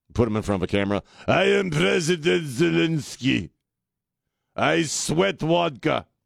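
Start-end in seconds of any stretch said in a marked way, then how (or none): 1.2-6.0 put-on very slow, dragged-out, creaky Russian accent. Imitating Zelensky in front of a camera: Zelensky imitation. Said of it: "suddenly he's going all Chekhov on us".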